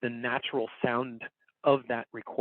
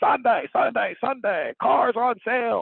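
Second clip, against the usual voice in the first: very high, loud, drawn-out hollering like a car advert; 11 semitones higher, 6 dB louder than usual. Explaining microphone distance with a car commercial line, yelled like a car commercial. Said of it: "a car commercial. ... that yelling thing".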